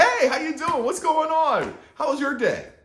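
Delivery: put-on very high, loud, eager, excited kid voice. Retelling a young boy in a wheelchair greeting someone, imitating an excited boy. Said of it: "the young boy is like so excited".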